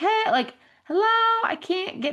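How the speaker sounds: very high, loud yell. Stuck in deep snow, the speaker retells calling out: retelling a yell for help. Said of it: "yelled for help because I was like".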